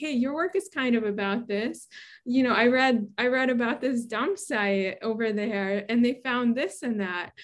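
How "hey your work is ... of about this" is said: plain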